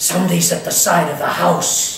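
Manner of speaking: loud stage whisper, loud enough to carry. Speaker retelling how someone woke them in the dark at night, retelling a loud whisper. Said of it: "she said in a loud whisper".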